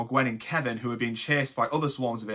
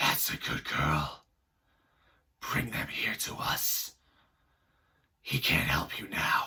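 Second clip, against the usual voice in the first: slow, husky, whispered put-on voice; 8 semitones lower, 4 dB quieter than usual. Doing an impression of a character whose voice sounded husky: husky put-on voice. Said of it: "it sounded a bit husky. I'm going to do my best impression of it".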